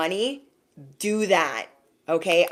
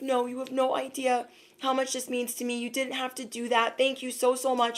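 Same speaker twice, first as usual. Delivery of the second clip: put-on teary, soft, high, overwhelmed gratitude; 5 semitones higher, 7 dB quieter than usual. Retelling what a sweet kid said, imitating someone crying. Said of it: "he was crying in tears".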